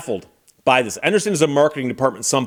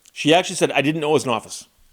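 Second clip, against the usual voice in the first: ordinary talk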